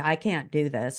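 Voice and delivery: acted tearful voice. Recounting an upsetting moment and calling for help, re-enacting past crying. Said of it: "I'm in tears. I'm crying".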